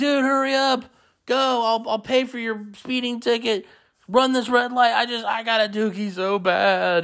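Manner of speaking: fake crying, high, with stretched words. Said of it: "I would pretend like I'm crying".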